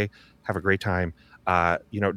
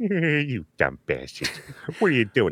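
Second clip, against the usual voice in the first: swooping voice, words pushed out the mouth corner; 4 semitones higher than usual. Showing how to do Peter Griffin, talking out the side of the mouth. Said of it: "take it over here to the side of the mouth, it really starts to sound like it".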